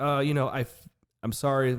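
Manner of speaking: normal talking voice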